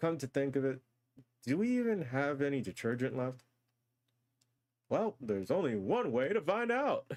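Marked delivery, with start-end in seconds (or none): 4.9-7.1 radio broadcast announcer voice. Checking with a housemate whether any detergent is left: announcer voice. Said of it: "stuck in my announcer voice".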